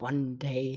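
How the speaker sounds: soft mumble under the breath. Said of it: "mumble under his breath".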